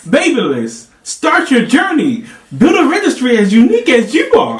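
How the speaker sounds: very loud, very high, enthusiastic excited voice. Rereading a card aloud after being asked for enthusiasm: loud and enthusiastic. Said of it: "speak up and have enthusiasm in your voice".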